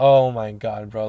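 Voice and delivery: acted, very slow, drawn-out, irritated and annoyed outburst. Retelling reaction to someone backing out of recording the podcast, mock-annoyed outburst. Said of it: "that shit kind of annoyed me".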